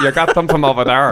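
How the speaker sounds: put-on slipping into a northern English accent. Recounting an arcade job, telling how the speaker once apologised to a northern customer. Northern English accent. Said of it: "I remember this guy from the north".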